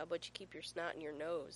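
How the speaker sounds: plain reading voice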